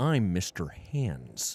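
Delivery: put-on American accent. Doing an impression after saying they'll talk American: put-on American accent. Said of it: "I'm gonna talk American now".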